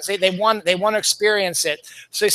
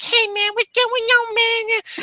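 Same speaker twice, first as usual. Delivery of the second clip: put-on very high, slow, drawn-out drunk voice; 14 semitones higher than usual. Describing a funny movie scene, imitating drunk Anthony Michael Hall. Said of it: "he's talking like this".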